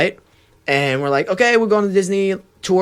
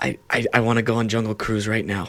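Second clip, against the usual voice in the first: creepy man voice, lower and quieter; 5 semitones lower, 5 dB quieter than usual. Acting a sketch as the only customer on guide Brittany's Disneyland tour, creepy guy voice. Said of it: "I'll like act like the creepy guy".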